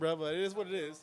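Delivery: talking through laughter. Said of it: "I'm sorry that I'm laughing".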